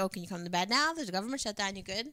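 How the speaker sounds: dripping, teasing, needling sarcasm. Retelling what she said to her partner late at night: imitating her own sarcastic line. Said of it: "say it sarcastically".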